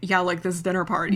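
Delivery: ordinary delivery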